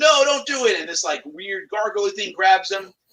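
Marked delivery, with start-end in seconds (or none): 0.0-0.8 all-out, shrill, loud screaming cry. Recapping a scene where Willow screams as Alora drains Graydon's soul: retelling Willow's scream. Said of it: "Willow was like screaming like".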